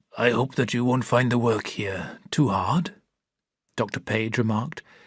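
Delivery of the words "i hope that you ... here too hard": speaking slowly with difficulty. Reading a story aloud, voicing the ill doctor: speaking slowly and with difficulty. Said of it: "speaking slowly and with difficulty".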